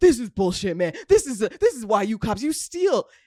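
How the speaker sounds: play-acted high, angry rant, losing it. Retelling a friend losing his temper with police: imitating someone losing it. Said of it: "my friend is losing".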